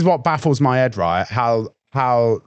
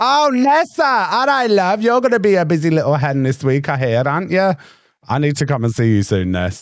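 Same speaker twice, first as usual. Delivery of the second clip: terrible fake Welsh accent, pitched high; 5 semitones higher than usual. After apologising for the accent, the speaker greets Nessa in a terrible Welsh accent. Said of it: "that is a terrible Welsh accent".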